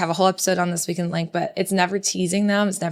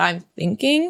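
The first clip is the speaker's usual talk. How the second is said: plain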